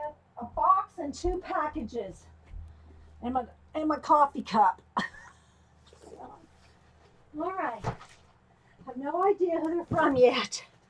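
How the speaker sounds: soft, breathless, out-of-breath panting. Having just carried in a box and packages, out of breath. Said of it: "Let me catch my breath".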